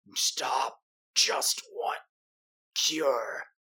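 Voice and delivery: very slow, drawn-out, pained creature cry. Narrating a punch that melts a creature's flesh: creature crying out. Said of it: "the creature cry".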